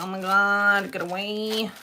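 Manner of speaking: usual speaking voice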